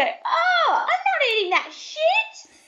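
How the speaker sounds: very high, shrill, drawn-out, as-loud-as-possible outburst. Retelling own outburst at a loud dinner table: imitating own high-pitched loud exclamation. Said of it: "high pitch, as loud as you can imagine".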